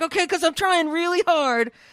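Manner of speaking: high, loud, obnoxious grunting voice. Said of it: "really obnoxiously grunting and going".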